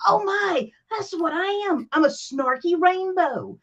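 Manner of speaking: high, slow, excited and delighted exclaiming.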